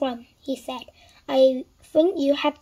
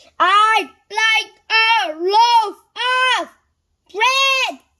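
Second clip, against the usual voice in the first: high, loud, very slow, drawn-out bellowing roar; 9 semitones higher, 7 dB louder than usual. A customer repeats himself to a woman pretending not to hear him, roaring. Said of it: "roared Mr. Noisy".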